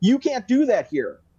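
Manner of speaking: high-pitched shout. Retelling how a man yelled at the speaker, retelling his yell. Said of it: "he yells at me".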